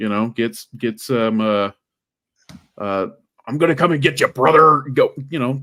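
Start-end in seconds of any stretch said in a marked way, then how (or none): 3.5-4.8 loud, pitched-up, barking wrestling promo voice. Speaker urges someone to learn from Hulk Hogan; Hulk Hogan impression. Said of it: "learn something from Hulk Hogan".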